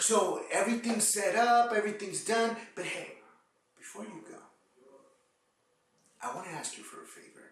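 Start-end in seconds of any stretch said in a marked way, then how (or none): 2.8-7.4 very soft, hushed, lowered serious voice. Demonstrating how to ask someone for a referral favor, in a lowered, serious voice. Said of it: "See how I lowered my voice?".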